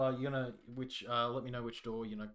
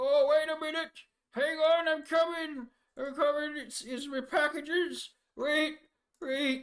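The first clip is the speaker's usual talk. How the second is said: put-on very high, very loud elderly dwarf man voice; 10 dB louder than usual. Narrator voices someone coming to answer the door, old dwarven man voice. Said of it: "This sort of old dwarven man opens the door".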